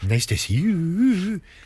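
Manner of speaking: gentle, soft-spoken Welsh accent, very slow and drawn out. Showing how a soft-spoken Welsh woman sounds: soft-spoken Welsh accent. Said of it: "A soft-spoken Welsh accent".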